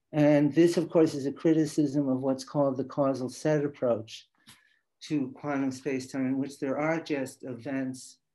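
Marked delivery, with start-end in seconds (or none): none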